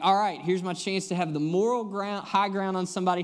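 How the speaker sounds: ordinary talk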